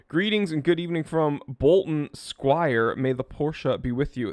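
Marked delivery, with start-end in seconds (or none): none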